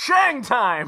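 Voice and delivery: big, booming announcer voice. Picturing a flaming basketball dunk: big booming NBA Jam announcer voice. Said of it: "the big booming announcer voice goes".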